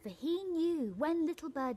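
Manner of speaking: ordinary delivery, nothing marked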